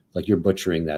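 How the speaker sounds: ordinary delivery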